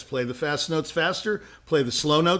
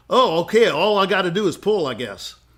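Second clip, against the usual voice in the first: put-on rural Texas country bumpkin accent; 2 semitones higher than usual. Retelling a joke, quoting a country bumpkin: imitating a country bumpkin accent. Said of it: "this country bumpkin at the end of it said".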